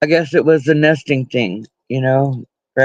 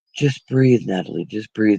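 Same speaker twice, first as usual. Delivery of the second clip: low, soft, deep man voice, close behind; 5 semitones lower, 4 dB quieter than usual. Retelling her daughter's birth, a mother quotes the girl's father's best friend: imitating Dale's deep man voice. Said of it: "in his deep man voice".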